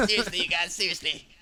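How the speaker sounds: high cartoon character voice. Voicing a game hero while joking with the others: Cartman voice. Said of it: "You just made Master Chief sound like Cartman".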